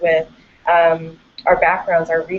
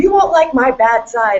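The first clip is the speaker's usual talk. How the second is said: mock menacing, loud and threatening; 6 semitones higher, 4 dB louder than usual. Retelling a professor threatening students: imitating a threatening professor. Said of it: "he starts threatening people".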